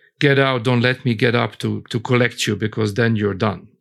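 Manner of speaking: plain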